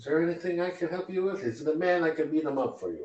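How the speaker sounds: half-orc woman character voice. Running the game, voicing a server talking to a distracted player, in half-orc server woman voice. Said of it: "one of the half orc lady server".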